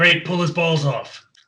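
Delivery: slow, acted-out yelling. Playing a spectator calling out to the fight: yelling from the crowd. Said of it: "And I yell out".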